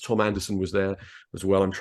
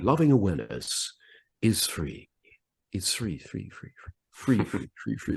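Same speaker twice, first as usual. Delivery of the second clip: lovely, beautiful radio DJ voice; 3 dB quieter than usual. Speaker recreates a Radio Caroline drop-in; beautiful Tony Allen voice. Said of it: "like this in that beautiful Tony Allen voice".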